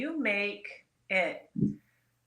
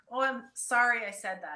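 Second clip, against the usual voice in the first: usual speaking voice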